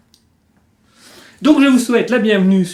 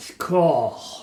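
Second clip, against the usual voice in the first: put-on English accent with a lowered pitch. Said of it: "J'adore cet accent anglais".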